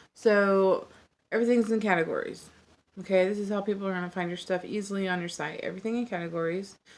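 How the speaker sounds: rushed, quick speech. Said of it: "I know I'm talking fast".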